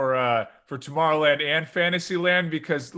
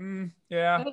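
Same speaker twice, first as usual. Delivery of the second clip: put-on unimpressed voice; 2 semitones higher, 3 dB quieter than usual. Imitating Jake, who is not impressed by anything, sounding unimpressed. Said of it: "And Jake would be like".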